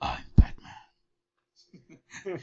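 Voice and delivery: loud, breathy stage whisper. Answering a remark about sounding like Batman: Batman voice. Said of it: "Sounds like if Batman said chicken".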